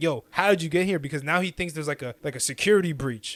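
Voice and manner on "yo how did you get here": put-on yelling, demanding and forceful. Retelling a story where a lieutenant confronts a farmer: imitating someone yelling. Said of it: "the lieutenant is literally yelling at him".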